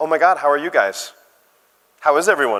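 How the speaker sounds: put-on American accent. Quoting a girl met while getting coffee, in a put-on American accent. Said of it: "this is my best American accent".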